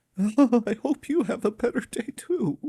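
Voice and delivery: high, mock teary, weepy whine.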